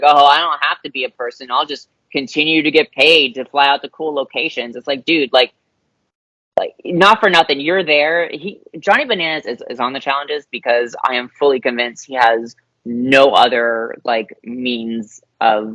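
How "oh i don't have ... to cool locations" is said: heavy sarcastic delivery throughout. Reading out a tweet from Johnny Bananas: imitating Johnny Bananas sarcastically. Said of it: "sarcastically is like".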